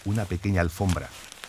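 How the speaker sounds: plain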